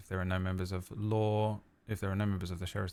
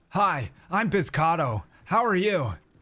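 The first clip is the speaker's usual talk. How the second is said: put-on American accent, tentative attempt; 10 semitones higher, 8 dB louder than usual. Asked how your american accent is, you demonstrate it: american accent. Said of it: "How's your American accent?".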